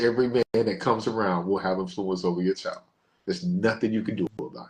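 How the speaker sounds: ordinary talk, nothing marked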